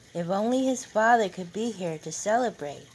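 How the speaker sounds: plain reading voice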